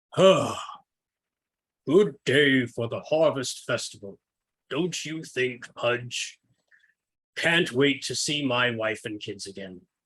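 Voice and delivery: deep, billowing, rolling voice. Describing an audio episode's opening, the lead greets his companion: deep, billowing Moonhammer voice. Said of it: "a deep, billowing voice says".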